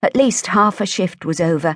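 ordinary delivery

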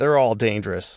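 ordinary delivery

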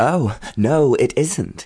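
gasping. A woman fighting off a man answers him while flailing, gasped. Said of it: "she gasped, flailing furiously".

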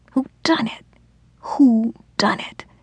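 tearful whisper, crying while whispering. A tipsy woman talking aloud without realizing: whispered, crying. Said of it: "She whispered".

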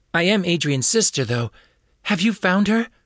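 desperate, frantic, very high-pitched voice. Andrea answers a police officer's call about her sister, frantic voice. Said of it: "Andrea asks in a frantic voice".

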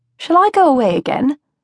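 said through a smile, rising. Narrator reads Livia asking her father from the door, smiling. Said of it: "she asked with a smile".

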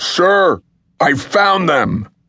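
booming voice. A worker calls out to his superior on spotting them: booming voice. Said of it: "The man's voice boomed".

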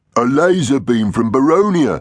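groaning throughout. Helped out of the control pit, he answers what hit them, groaning. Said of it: "Iggy groaned".

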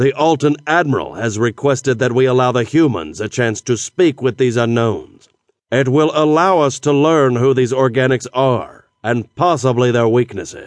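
plain reading voice

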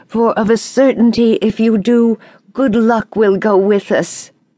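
high, begging plea. Leif answers his father Eric, who refuses to go to sea; pleading. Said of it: "pleaded Leif".

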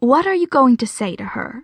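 ordinary delivery, nothing marked

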